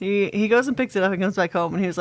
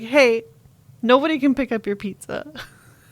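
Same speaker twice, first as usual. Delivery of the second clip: mock forlorn, sad, desperate, pleading delivery; 4 semitones higher, 4 dB louder than usual. Retelling a call from the pizza place: imitating a sad, desperate caller. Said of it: "so sad and desperate, like, just like that".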